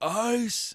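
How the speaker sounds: high, bellowing coach-style yell. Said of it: "We're gonna hear bellowing Tom Thibodeau".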